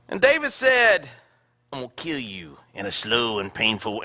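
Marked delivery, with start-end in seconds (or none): 1.7-4.0 put-on hillbilly accent, lower and quieter. Retelling a Bible story, jokingly giving David's line in a redneck voice. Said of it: "that's in the redneck version".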